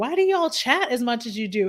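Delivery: ordinary delivery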